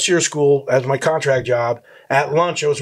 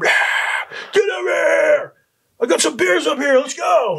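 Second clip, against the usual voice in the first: mock, very high, excited hollered yell; 14 semitones higher than usual. Retelling calling a guide over to share beers: retelling own yell. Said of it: "I'm yelling".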